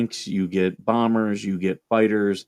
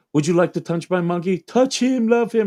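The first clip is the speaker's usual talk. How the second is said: put-on German character voice, pitched up; 10 semitones higher than usual. Retelling a Saturday Night Live sketch: imitating Dieter, German character. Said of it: "a German character named, um, Dieter".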